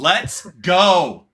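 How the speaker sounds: very loud excited shout. Speaker, alone in an empty office, reacts to a point about reducing cognitive load; yelling. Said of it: "I'm yelling at my office".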